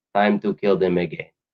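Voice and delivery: terrible put-on Polish accent. Quoting old Polish people in the neighborhood, speaker uses a terrible Polish accent. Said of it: "a terrible Polish accent of mine".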